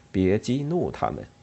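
plain reading voice

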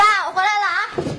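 loud, shouted voice. Coming home and calling out to their father, shouting loudly. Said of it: "别瞎嚷嚷".

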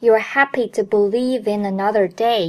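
ordinary talk

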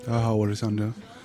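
feeble, drained, lifeless, low-energy voice. A podcast guest greets listeners after a long recording past 1 a.m., in a weak, listless voice. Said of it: "怎么都这么、啊、有气无力".

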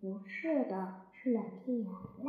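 soft, hushed, low voice.

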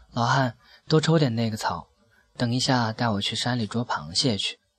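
ordinary delivery

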